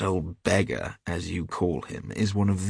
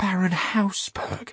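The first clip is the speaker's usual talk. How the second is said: very high-pitched, loud outcry; 11 semitones higher than usual. Narrator reading Hughie's exclamation in a story, crying out. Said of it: "cried Hughie".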